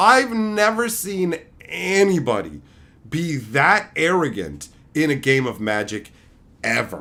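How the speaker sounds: usual speaking voice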